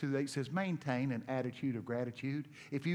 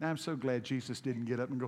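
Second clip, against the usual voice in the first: plain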